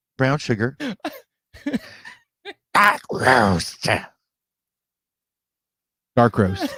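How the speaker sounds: put-on slow, swooping cartoon villain voice. Listing the flavors in the coffee: put-on cartoon villain voice. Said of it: "You sound like a cartoon villain".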